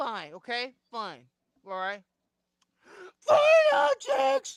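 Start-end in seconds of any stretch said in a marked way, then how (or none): 3.2-4.6 shrill, very loud, high shout. Following the other speaker's direction to say the words real loudly, despite not wanting to shout. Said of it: "objects real loudly".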